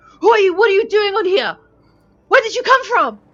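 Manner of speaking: shrill, very high, very loud yell. Narrating the scene, the speaker voices the captain questioning a newcomer: shouting captain. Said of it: "the captain is shouting".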